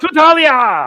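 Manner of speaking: loud, high, hearty cheering.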